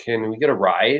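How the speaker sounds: ordinary talk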